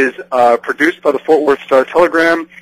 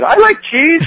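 put-on very high, charming three-year-old girl voice; 13 semitones higher than usual. Retelling what a three-year-old daughter said in the car: imitating a three-year-old's charming voice. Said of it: "in that wonderful, charming voice".

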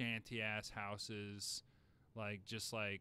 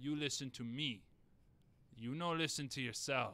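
put-on Italian mobster gangster voice; 4 semitones higher, 4 dB louder than usual. Doing a comedy bit about restaurants, speaking in an italian mobster voice. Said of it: "Italian mobster".

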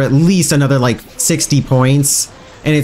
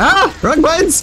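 very high, flustered, panicked cry. Pressing the wrong buttons on a new keyboard: panicking.

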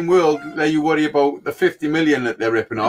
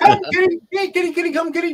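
put-on higher-pitched voice used for calling a cat; 14 semitones higher than usual. Describing Jack putting on glasses: imitating Jack calling a cat. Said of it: "And he goes".

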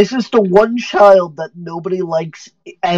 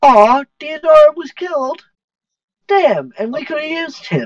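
put-on grating, irritating, very high-pitched child's voice; 9 semitones higher than usual. Game master voicing what the players hear after a kill: irritating voice. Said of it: "you hear a rather irritating voice just be like".

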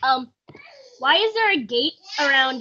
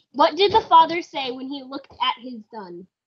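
ordinary talk

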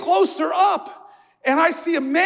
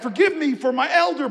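ordinary delivery

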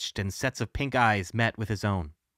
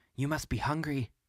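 hushed, soft, quiet voice; 3 semitones higher, 6 dB quieter than usual. Alex speaks to the creature beside the Rat King's body, said softly. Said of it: "Alex said softly".

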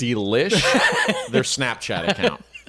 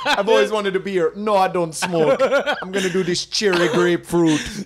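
stoner voice with raised pitch; 6 semitones higher than usual. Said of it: "that's my impression of you in Jamaica".

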